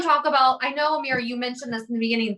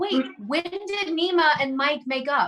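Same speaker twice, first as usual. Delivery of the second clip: plain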